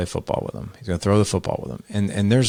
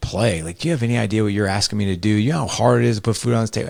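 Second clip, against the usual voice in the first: play-acted furious, erupting angry outburst; 2 semitones higher than usual. Retelling how a boy's father erupted when asked to play, imitating an angry outburst. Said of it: "his dad erupted and was like".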